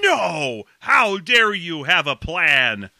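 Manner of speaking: loud furious outburst, drawn out slowly.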